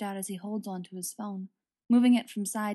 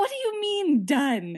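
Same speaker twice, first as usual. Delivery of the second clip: voice raised, pitch climbing higher and higher; 7 semitones higher, 5 dB louder than usual. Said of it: "his voice rising in pitch".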